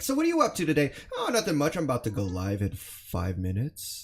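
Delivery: mock-sneaky chatter. Streamer acting out a viewer's sneaky chat message, in a mock-sneaky voice. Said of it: "people are being sneaky about it".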